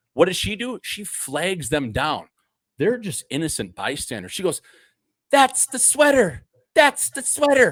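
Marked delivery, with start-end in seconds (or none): 5.3-7.7 very high, small, catty voice. Imitating a woman flagging down bystanders, in a little high-pitched voice. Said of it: "Like in this little fucking high cunty voice".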